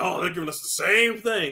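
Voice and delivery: sarcastic, mocking put-on voice. Complaining about how critics treat Nintendo, mocking the critics' complaint. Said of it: "they lambast them like".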